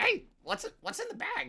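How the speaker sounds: tiny, scratchy critter voice, very high. Walking through finished comic panels, voicing a character in a little scratchy tweaky voice. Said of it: "the little kind of scratchy tweak esque voice".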